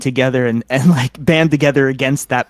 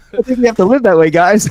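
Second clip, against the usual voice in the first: louder, higher-pitched, projected voice; 8 semitones higher, 5 dB louder than usual. Repeating a line after being asked to say it louder: saying it louder. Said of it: "say it louder, please".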